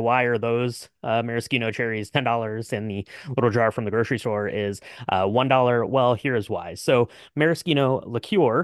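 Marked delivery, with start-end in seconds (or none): none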